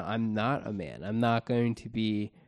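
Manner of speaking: ordinary talk, nothing marked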